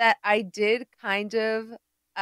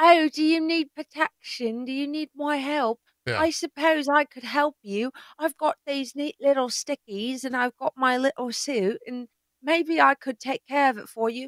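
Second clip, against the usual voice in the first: put-on British accent; 4 semitones higher than usual. Speaker imagines how a man would talk to people: put-on british voice. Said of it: "imagine him ... being like".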